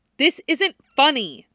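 sharp, high-pitched snapping delivery. A woman answers a man who has just laughed, snapping. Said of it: "she snaps at him".

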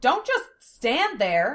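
high, swooping, loud yelled shout. Her spell having failed, a woman shouts at a man. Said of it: "Lena shouted at Zelos".

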